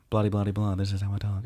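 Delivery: flat, level, deadpan monotone drone. Describing a calculating character on a show, imitating how she talks in a monotone voice. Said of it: "Like she's very monotone".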